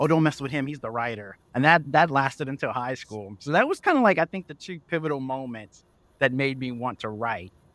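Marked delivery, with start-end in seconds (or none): none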